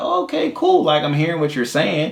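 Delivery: mellow, easygoing, light voice, pitched way up high.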